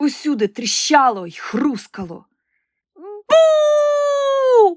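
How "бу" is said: very high, long drawn-out bellow. Narrator reads a character suddenly roaring into a mare's ear: roaring. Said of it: "раптом заревіла Олена".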